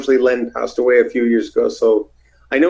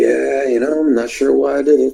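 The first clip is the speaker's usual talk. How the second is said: put-on, stoned-sounding voice. Retelling phone calls with Piper: Piper sounding stoned. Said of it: "he always sounded like he was three joints in".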